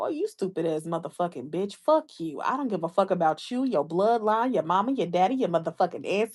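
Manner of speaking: totally calm, steady cussing. Retelling how the speaker's aunt would answer an insult, imitating Aunt Barbara's calm cussing. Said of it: "she's not even gonna yell while doing it".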